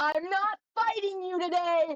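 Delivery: loud yell at full voice. A character moving the ship's anchor, answering a voice calling her name, yelling. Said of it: "Calypso just yells".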